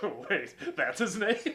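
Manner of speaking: acted giggly snickering, words half-laughed. Retelling how some people reacted to the name: imitating people snickering. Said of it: "some people snickering like".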